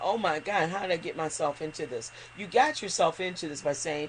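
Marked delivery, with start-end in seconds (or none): none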